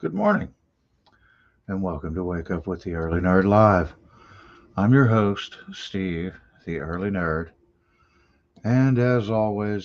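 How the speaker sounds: restrained, low-key morning-show host delivery. A host opens his morning live show, trying not to wake someone: talking quietly. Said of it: "I'm talking quietly".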